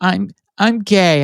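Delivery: crying through words, tearful, high and halting. Retelling a brother's confession over the phone: imitating someone crying. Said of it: "He's crying".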